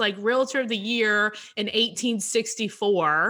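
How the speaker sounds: plain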